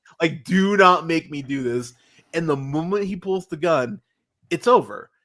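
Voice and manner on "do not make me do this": mock, put-on pleading, begging voice. Recapping a scene where a man begs others, imitating begging. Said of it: "he's begging them".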